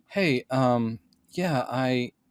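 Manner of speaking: very slow, befuddled, dazed stammering. Retelling a horror scene where a man with an axe in his skull speaks: imitating a dazed, brain-scrambled man. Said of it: "his brain is scrambled".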